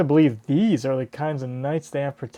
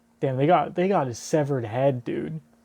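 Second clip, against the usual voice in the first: ordinary delivery, nothing marked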